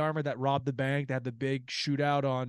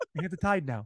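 put-on gruff voice; 2 semitones higher than usual. Quoting a podcast bit: Robert De Niro impression. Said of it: "that's De Niro".

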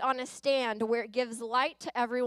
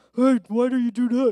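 very loud mocking put-on voice; 10 dB louder than usual. Showing what giving your spouse a voice while arguing sounds like: mocking voice imitating spouse. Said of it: "don't ever give your spouse a voice".

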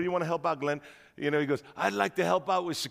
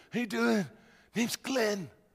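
put-on pitched-up Italian mobster tough-guy accent; 5 semitones higher than usual. Retelling meeting a man who stood up to greet him, imitating Glenn's voice. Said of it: "talks just like this".

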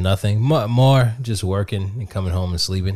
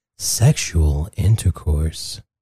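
put-on sexy voice, low and sultry; 4 semitones lower than usual. Repeating a word's definition for the co-host, saying it a little sexier. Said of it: "Let me say that a little sexier".

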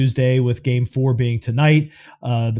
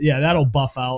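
plain

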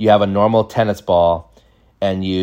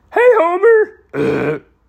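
put-on drunk cartoon voice, pitched higher. Doing the drunk dad as Barney greeting Homer: imitating Barney from Simpsons. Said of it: "He was like Barney from Simpsons".

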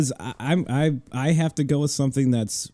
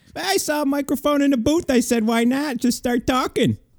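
squeaky, very high put-on voice; 12 semitones higher than usual. Pretending to be Joe Theismann, explaining how he got to the microphone: Joe Theismann impression. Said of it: "It's actually really Joe Theismann".

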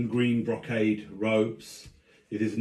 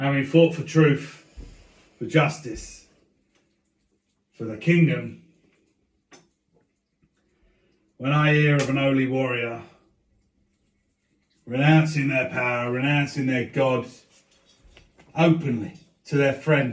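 put-on elderly senator character voice, higher and louder; 3 semitones higher, 5 dB louder than usual. Voicing an old warrior senator addressing the senate: old warrior senator voice. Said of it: "This man looks to be in his seventies".

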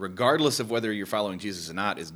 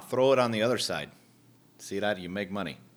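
put-on hard-to-place accent, half Irish, half Canadian. Playing the one who pulls money out of a fish, irish or canadian accent.

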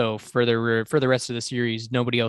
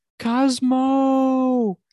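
mock screaming, very high, shrill and drawn out; 13 semitones higher, 5 dB louder than usual. Describing a show, retelling how Deck screams a name. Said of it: "He's just screaming".

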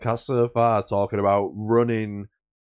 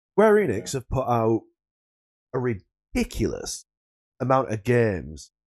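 swooping video game announcer voice. Talking about game releases, sounding like the Halo commentator. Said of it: "I sound like the fucking Halo commentator".

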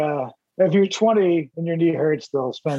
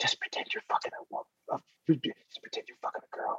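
very soft, hushed whisper, barely audible; 13 dB quieter than usual. Retelling what the swim instructor told him: imitating a whisper. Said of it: "he whispers".

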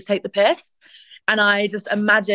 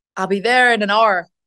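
put-on Irish accent, much faster. Asked about practicing an irish accent, the speaker tries one out in an irish accent. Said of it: "Have you been practicing your Irish accent?".

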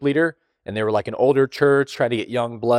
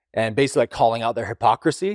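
ordinary talk, nothing marked

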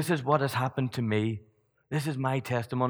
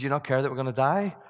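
normal talking voice

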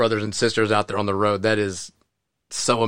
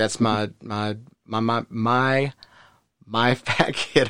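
tongue-tied, very slow, stammering and stumbling. Telling another speaker what they answer coworkers: stammering, tongue-tied. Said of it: "I can't even talk. I'm getting tongue twisted".

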